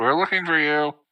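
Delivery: light, easy, even voice, called out. Calling out in character while searching for a missing companion: yelling very loud. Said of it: "I yell very loud".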